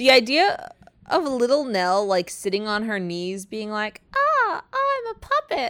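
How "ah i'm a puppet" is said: tiny, very high, slow, drawn-out voice. Picturing Little Nell on someone's knees as a puppet, in her little voice. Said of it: "in her little voice".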